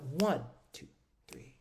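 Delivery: "one" stressed, "two" and "three" light. Counting one, two, three to get the feeling of a waltz: stress on one. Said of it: "When I added that emphasis on, I went".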